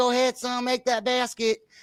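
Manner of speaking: put-on lisp. Telling friends about a man at a kid's basketball game, imitating a Southern Oklahoma lisp. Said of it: "He was talking like this".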